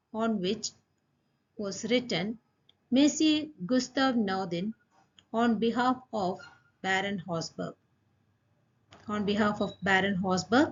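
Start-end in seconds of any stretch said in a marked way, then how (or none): none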